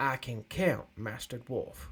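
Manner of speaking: sardonic, wry, mocking tone with knowing edge. Narrating, the man replies to the dwarf facing him, wry tone. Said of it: "the man says wryly".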